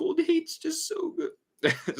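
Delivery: talking through a very high, slow yawn. Speaker who keeps yawning while talking about a video, yawning while talking. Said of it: "Sorry, I'm yawning".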